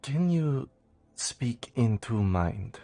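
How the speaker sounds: whispering in a character voice. Playing a character who leans over and asks Miriam quietly: whispering in character. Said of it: "I whisper to her".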